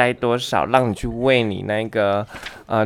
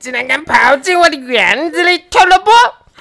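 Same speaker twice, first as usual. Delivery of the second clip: very shrill, loud, furious witch voice, rising; 8 dB louder than usual. The storyteller voices the witch catching the thief in her garden: angry witch voice. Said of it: "她很生气的说".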